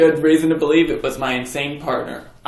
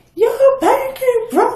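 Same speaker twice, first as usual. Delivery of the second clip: very high voice with an echo; 3 dB louder than usual. Retelling a cartoon scene: imitating Pinkie Pie's echoing voice. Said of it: "she gets the extra echo in her voice".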